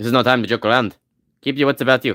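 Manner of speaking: put-on fake Russian accent in a low voice. Player voicing a game character's dialogue line aloud, put-on Russian-sounding accent. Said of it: "That's Russian".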